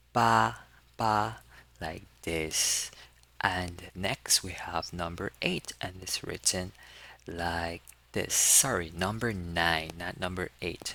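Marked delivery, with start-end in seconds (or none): 0.1-1.3 high level tone held on ba. Showing how to pronounce the Chinese number eight: Mandarin first tone on ba. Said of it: "we pronounce it in the first tone".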